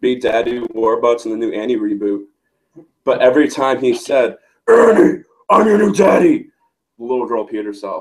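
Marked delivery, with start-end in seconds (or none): 4.7-6.5 very high-pitched put-on voice.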